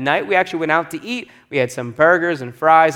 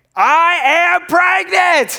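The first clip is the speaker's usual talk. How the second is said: put-on, high, full shout with drawn-out I; 13 semitones higher, 4 dB louder than usual. Retelling how the wife yelled into the phone: imitating wife yelling. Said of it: "my wife in the next room yelling at the phone".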